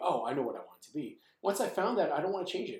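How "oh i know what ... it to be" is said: ordinary delivery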